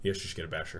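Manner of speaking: very low, very quiet, flat deadpan. Retelling a game where Kevin answered a question about items, imitating Kevin's deadpan. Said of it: "Kevin says in the same deadpan".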